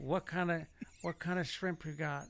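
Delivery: soft, muffled mumble through stuffed, puffed-out cheeks. Retell your bit about a seafood restaurant, doing a Marlon Brando impression with tissue-stuffed cheeks. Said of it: "I took tissue paper and I stuck it in my cheeks".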